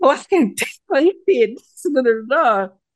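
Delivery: high, loud, excited gush.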